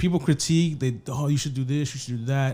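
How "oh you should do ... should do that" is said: normal talking voice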